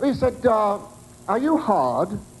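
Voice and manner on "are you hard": put-on very posh upper-class accent. Retelling a phone call from a man, the speaker does his very posh voice. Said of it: "this voice was on the phone now, a man. Very posh, very posh".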